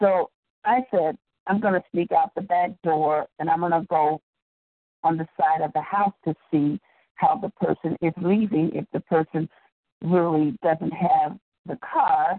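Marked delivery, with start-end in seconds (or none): none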